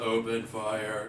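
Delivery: quiet, flat, expressionless monotone delivery. Game master voicing one of three armed men giving an order, monotone voice. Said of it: "Very monotone voice".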